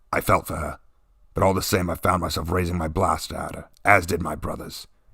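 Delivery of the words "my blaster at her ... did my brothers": ordinary delivery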